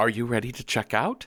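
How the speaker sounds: mock polite, proper receptionist voice. Retelling the front desk greeting a guest on the phone: imitating a proper front-desk voice. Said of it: "proper voice that is ostensibly here to help".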